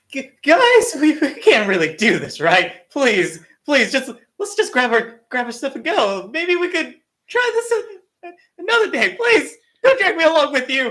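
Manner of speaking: very high, swooping, pathetic cowardly pleading. Voice-acting a character on request, pathetic coward voice. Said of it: "give me a pathetic uh, coward, a damsel in distress almost".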